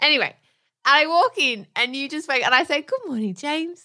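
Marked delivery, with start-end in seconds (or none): 2.8-3.8 small, soft, sugary-sweet little voice. Retelling a morning greeting to someone just waking, in a sweet little voice. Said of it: "in my sweet little voice".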